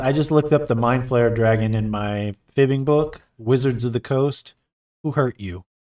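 ordinary delivery

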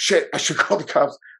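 frantic, panicked voice. After her sister yells to call the cops, the speaker retells her own panic. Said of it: "and then I was panicking".

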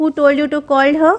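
usual speaking voice

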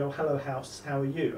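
usual speaking voice

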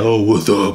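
stupid-sounding, dopey put-on voice. Retelling how the caller answered the FaceTime: imitating a dumb deep voice. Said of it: "Dumb deep voice for what?".

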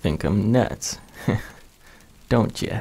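chuckling, amused, little laugh through the words. Narrator reads a man's line to the frightened narrator, with a chuckle. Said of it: "he said with a chuckle".

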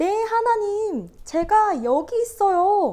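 big, high, loud, slow voice.

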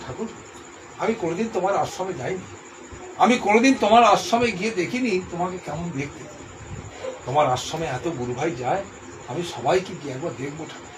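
usual speaking voice

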